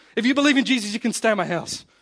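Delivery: loud, high, furious rant, completely losing it. Retelling a woman on a TV show losing it: imitating a furious rant. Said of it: "Loses it".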